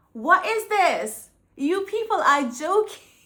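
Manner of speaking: furious, high, loud angry ranting yell. Speaker recalls getting angrier watching TV, retelling own yelling. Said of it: "I was literally yelling at my T V".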